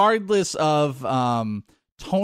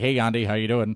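polite put-on voice, pitched lower; 5 semitones lower than usual. Imitating a player greeting a teammate: imitating Blake. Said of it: "and he's like".

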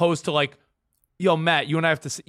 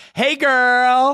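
put-on effusive, gushing, high voice, "girl" drawn out long; 8 semitones higher, 7 dB louder than usual. Playing his partner in a reenactment with a teacher: imitating her gushing greeting. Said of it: "You be me".

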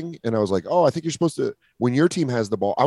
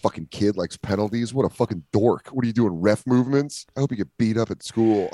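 put-on muttering under breath. Retelling what he said about a kid while leaving; retelling a mutter under breath. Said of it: "I was saying it while we were leaving under my breath".

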